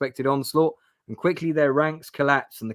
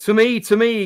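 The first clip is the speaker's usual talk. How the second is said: loud booming call, louder; 8 semitones higher, 6 dB louder than usual. Reading a gamebook captain rallying his men: booming voice. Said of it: "Captain DeVale's voice booms".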